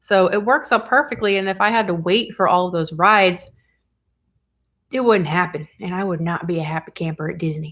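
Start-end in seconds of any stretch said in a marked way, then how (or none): 5.8-7.7 soft voice with a slight touch of country accent. Describing a day at Disney, slipping into a country accent. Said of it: "I went country there for a second".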